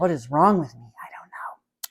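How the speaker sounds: whispered.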